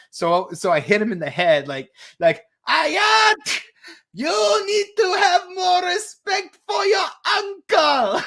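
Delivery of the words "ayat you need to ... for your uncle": "Ayat" pitched very high and stretched out. Retelling scolding a guy who praised the impression: Uncle Chan impression. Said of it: "that's a great Uncle Chan impression".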